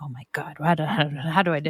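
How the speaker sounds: play-acted, low, frustrated grumbling. Retelling being stuck in a game in the basement, mock-grumbling. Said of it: "like grumbling".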